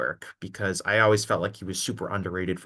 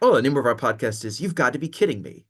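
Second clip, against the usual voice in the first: put-on proper, formal tone, raised and pitched up; 6 semitones higher, 6 dB louder than usual. Imitating the other speaker saying the podcast name professionally: imitating a plain professional delivery.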